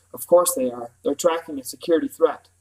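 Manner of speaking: ordinary delivery, nothing marked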